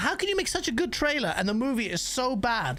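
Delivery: ordinary delivery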